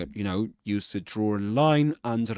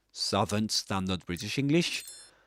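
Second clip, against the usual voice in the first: ordinary talk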